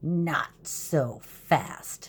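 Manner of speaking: nasty, menacing, unpleasant hissing voice. A woman stops a group of troublemakers, in a hissing, unpleasant voice. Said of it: "hissed an unpleasant voice".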